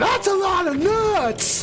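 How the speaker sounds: very high shriek, drawn-out nuts. Retelling screaming a movie quote out loud in the store: imitating own past scream. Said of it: "I literally screamed out loud in the store".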